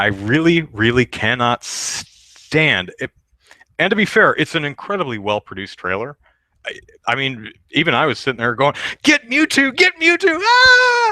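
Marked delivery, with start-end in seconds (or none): 9.0-11.1 put-on very high, drawn-out, rising, eager excited voice. Retelling watching a trailer and cheering at it: retelling own excited cheering. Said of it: "you get caught up in the exci-, excitement".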